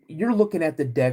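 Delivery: normal talking voice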